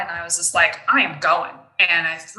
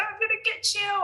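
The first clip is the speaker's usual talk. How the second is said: put-on fearless scream, very high pitched; 5 dB quieter than usual. Retelling charging at a high school kid at age five: retelling a scream. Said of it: "I am like screaming".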